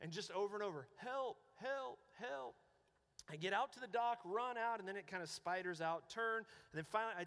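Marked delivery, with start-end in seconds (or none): 1.0-2.5 mimicked faint voice, higher and slower. Speaker retelling running toward someone calling for help, imitating a faint voice. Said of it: "this really faint voice".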